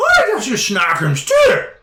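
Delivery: very high, loud, swooping giantess voice. A figure that is a mass of hair steps out and speaks: high-pitched voice. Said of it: "in a high pitched voice goes".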